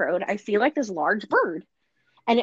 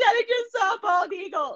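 acted, very high-pitched weeping voice; 11 semitones higher than usual. Recounting a phone call with their dad, re-enacting crying while telling him. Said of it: "I'm crying".

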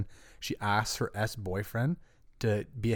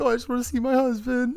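very high, put-on tearful wailing and sobbing; 13 semitones higher, 3 dB louder than usual. Retelling a woman brought into the police station: imitating a woman fake crying. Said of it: "She's like crying".

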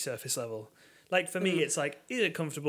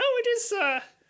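put-on very high, loud, young small-boy voice; 6 dB louder than usual. Acting out a Christmas Carol scene as the boy answering, in a small Victorian boy voice. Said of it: "I was very convincing as a small Victorian boy".

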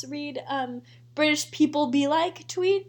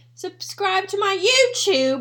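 bad put-on British accent, loud and high; 5 semitones higher, 6 dB louder than usual. Joking about how British people talk: terrible British accent. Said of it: "British people be like".

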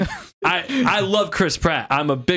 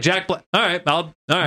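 usual speaking voice

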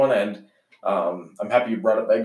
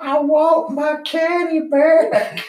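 put-on very high, shrill, long-stretched yelling; 4 dB louder than usual. Retelling a movie scene where a character smashes a minivan: imitating a yell. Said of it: "He's just yelling".

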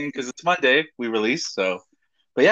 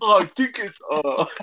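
mock stuttering, higher pitched; 7 semitones higher than usual. Repeating the other speaker's impression: imitating someone stammering. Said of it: "That's a good impression of Logan".

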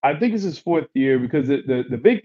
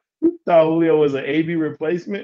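words broken up by laughter. Asking the other speaker about a past opinion, laughing while talking. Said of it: "Why are you laughing at that".

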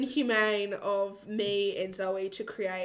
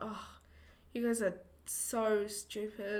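quieter, put-on disappointed sigh; 5 dB quieter than usual. Retelling the teacher reacting to the students: imitating a disappointed sigh. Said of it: "just sighing".

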